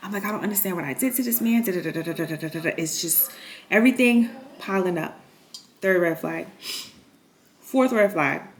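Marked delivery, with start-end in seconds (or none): 0.2-1.6 put-on tearful, bawling voice. Retelling breaking down at the tattoo parlor: imitating own past crying. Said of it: "I'm crying, I'm bawling".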